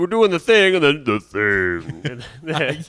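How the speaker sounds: booming, swooping, loud, slow monster voice effect. Retelling a guy with a monster voice button while filming video: low monster voice. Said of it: "He had like a low voice, like a monster voice button".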